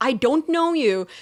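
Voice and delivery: furious, loud, high-pitched angry scream. Recounting a stranger who came up to the cockpit, retelling a scream. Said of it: "I'm screaming in my helmet saying like".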